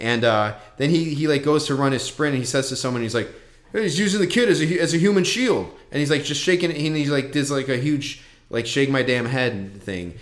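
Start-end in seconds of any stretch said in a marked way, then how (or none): 3.7-5.7 put-on grumpy old man voice, higher, louder. Retelling what a man said before running his sprint, in an old man voice. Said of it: "he sounds like an old man, like a get off my lawn kind of guy".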